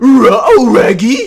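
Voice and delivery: booming, very high, loud, swooping cartoon dog voice. The speaker shows the only impression he can do, a Scooby-Doo voice. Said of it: "it's Scooby saying "Ruh-oh, Raggy."".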